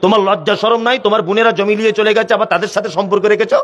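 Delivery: ordinary talk, nothing marked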